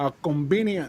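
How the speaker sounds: acted Cuban uncle voice with Cuban accent. Imitating an uncle's reaction to a comment: imitating a Cuban uncle. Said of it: "He would go".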